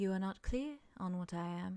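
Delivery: speaking very softly. Describing a game scene, the narrator voices a character answering; very soft voice. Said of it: "they very softly say".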